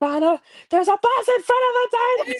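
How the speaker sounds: shrill, very high, loud screaming. Retelling a scene from the show: imitating Jade screaming. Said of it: "Jade screaming like".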